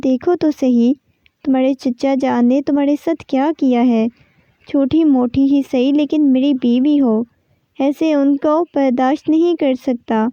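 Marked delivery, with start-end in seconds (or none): none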